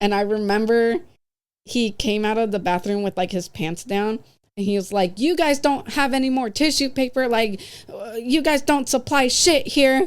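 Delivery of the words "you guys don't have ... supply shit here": grumbling, complaining half-yell, mild ranting. Retelling a customer complaining about tissue paper: imitating someone yelling. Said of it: "And he's just yelling at me".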